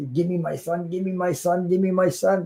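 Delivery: high, insistent put-on mother's cry. Retelling how a mother screamed at the nurse: imitating mom screaming. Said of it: "my mom was screaming".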